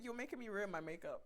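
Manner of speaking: ordinary talk, nothing marked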